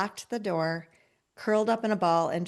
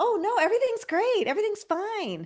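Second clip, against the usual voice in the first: voice jumping up, very high, put-on; 12 semitones higher than usual. Entrepreneur asked how business is, insisting with voice jumping up in pitch. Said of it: "our voice goes up a couple octaves".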